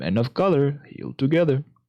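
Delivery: cadence like a scripted video game voice line. Repeating the other speaker's phrase back to them, in video game voice-line cadence. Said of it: "the same cadence that they would say a voice line in".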